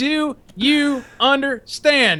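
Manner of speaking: high-pitched mock drill instructor screaming. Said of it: "fucking screaming at me".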